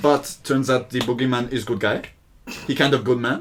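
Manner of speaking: put-on German accent. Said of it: "that was German".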